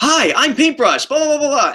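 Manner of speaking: very high-pitched character voice. Retelling a first try at voicing a character: pitched-up Paintbrush voice. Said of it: "did my best impression going like".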